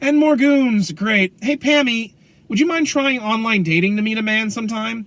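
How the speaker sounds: high, sassy quip. Retelling a game scene, speaker voices Selina talking to Poison Ivy, sassy Selina impression. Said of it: "she's like".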